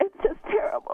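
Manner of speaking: tearful, weeping, crying voice. Telling others about a friend's husband's affair, crying while talking. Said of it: "why are you crying?".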